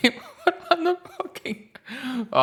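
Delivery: very high voice, words breaking into laughter. Trying to make a point about two players, laughing while talking. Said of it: "I can't even say it without laughing".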